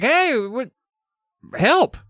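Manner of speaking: mock yell, very high shout. Retelling a book scene where a trapped boy calls up from a pit: acting out a shout for help. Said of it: "He shouts up to her".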